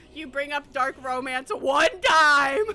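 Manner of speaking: loud, high shocked exclamations, blurted out.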